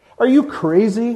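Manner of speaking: very high, derisive, sneering jeer. Reading the man by the pole answering the ragman, sneering. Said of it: "Sneered the other".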